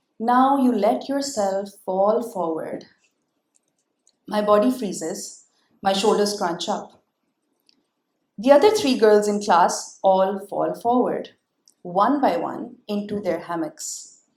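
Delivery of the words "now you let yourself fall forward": mock serene, very calm guided-meditation voice. Retelling a hammock class, quoting the trainer: imitating a very calm voice. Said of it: "in a very calm voice, the kind you hear in guided meditation videos".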